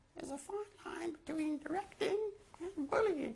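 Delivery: mocking, high-pitched imitation.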